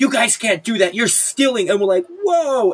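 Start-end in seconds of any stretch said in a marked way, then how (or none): 0.0-1.7 play-acted, sharp, mild scolding tone, half-shouted. Retelling how a lady started screaming at them, retelling a woman's screaming. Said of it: "starts screaming at us".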